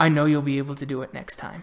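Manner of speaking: soft whispered voice. A character helps the listener up and leans in, whispering in their ear. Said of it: "he whispers in your ear".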